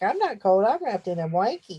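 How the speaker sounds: pet dog's talking voice. Voicing the dog Bambi, who lies wrapped in a blanket: voicing the dog Bambi. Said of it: "Bambi's like".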